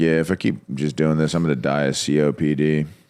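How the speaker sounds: flat, emotionless put-on voice. Retelling what Austin told the speaker: imitating Austin's emotionless tone. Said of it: "with no emotion behind it".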